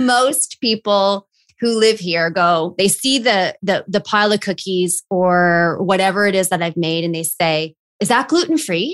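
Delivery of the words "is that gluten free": hesitant, uneasy, slightly apprehensive voice. Retelling how residents ask about the cookies the speaker made, mock-apprehensive question. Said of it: "a little bit of apprehension".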